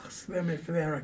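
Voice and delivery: whispered aside. Speaking aside to one person in the group, whispering. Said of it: "I'm just whispering to you".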